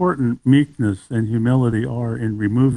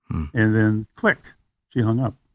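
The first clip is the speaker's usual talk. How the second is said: plain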